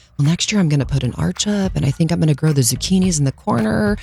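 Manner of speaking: mock mumbling, muttered to oneself. Retelling what the partner said while driving home; imitating him mumbling. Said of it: "he's like kind of mumbling to himself".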